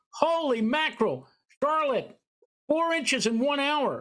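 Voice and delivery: mock shrill yelling, pitched way up. Recalling two a.m. at the weather office, imitating Andy yelling. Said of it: "he's like yelling".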